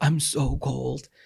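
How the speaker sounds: trembling, shivery voice. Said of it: "heard him shivering loudly".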